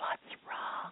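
soft, hushed whisper. Retelling asking a girl in church what was wrong: retelling own whisper. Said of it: "So I whispered to her".

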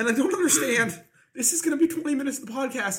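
very high-pitched speech, crying through the words. Podcast speaker while the others laugh at them, crying while talking. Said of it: "I'm literally crying".

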